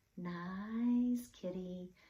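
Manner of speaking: soft-voiced, coaxing. Narrator reading a character's words as he coaxes a cat: soft voice. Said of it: "he said in a soft voice".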